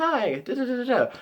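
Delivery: put-on very high, slow, adorable little-child voice. Showing how a cute anime kid is expected to sound: cute child voice. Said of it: "you expect their voice to be all cute and adorable".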